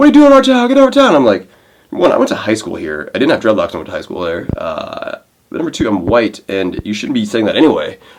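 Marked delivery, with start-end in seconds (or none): 0.0-1.1 play-acted hostile screaming, very high-pitched. Speaker retells kids yelling at him at a stop sign, imitating someone screaming. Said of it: "screaming at me like".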